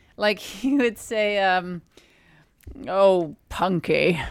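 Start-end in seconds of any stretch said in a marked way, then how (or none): 2.9-4.2 put-on elderly man voice, much lower pitch. Retelling how someone imitated an elderly man talking to Punky, imitating George Henry's voice. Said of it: "he would imitate him saying something".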